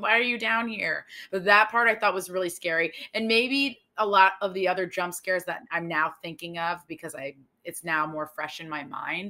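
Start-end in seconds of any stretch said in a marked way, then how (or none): 0.0-1.1 put-on small, half-strength scream, mild yell. Retelling a horror film scene where a mother confronts her son: imitating a mother screaming. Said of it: "she's screaming at him, like".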